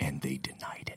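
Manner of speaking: soft, breathy, very quiet hushed whisper. Telling a story about an insurance claim, whispered. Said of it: "You like the way I say that, whispering?".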